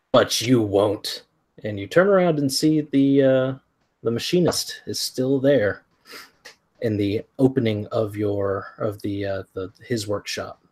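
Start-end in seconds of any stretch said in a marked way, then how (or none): 0.1-1.2 annoyed, irritated, peeved retort. Game master voicing the machinist speaking up behind the players, in an annoyed voice. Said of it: "you hear an annoyed voice say".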